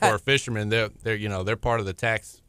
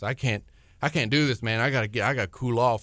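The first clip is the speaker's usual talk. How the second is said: put-on winded, breathless voice. Retelling a family friend's words on a hot boat: imitating someone winded. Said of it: "just winded".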